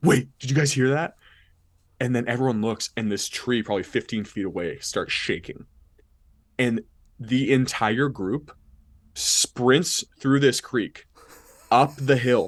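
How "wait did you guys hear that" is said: sudden, mock shouted yell. Retelling how a brother yelled at a creek on a night hike: imitating brother yelling. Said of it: "he yells".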